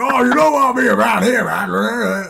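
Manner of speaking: slow, rasping drawl, "man" drawn out. Joking about a bad casting idea: Temuera Morrison doing the Wrecker voice. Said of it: "Tamara Morrison doing the Wrecker voice would be fucking horrible".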